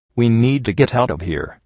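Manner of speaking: plain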